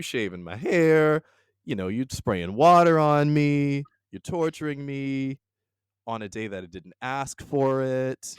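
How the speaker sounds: high, aggrieved, upset, put-upon griping. Acting out a captive's complaint at her captor, acting upset. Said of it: "I'd be upset".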